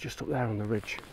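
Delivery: soft, hushed narrator voice. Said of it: "I'll do my Morton voice".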